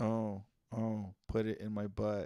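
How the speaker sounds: disinterested deadpan monotone, no feeling. Acting out an imagined partner's dirty talk, monotone and emotionless. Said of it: "super monotone and emotionless".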